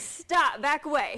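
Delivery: loud, firm, authoritative commanding tone. In a practice scenario, answering someone who demands money, an authoritative command. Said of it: "Be authoritative".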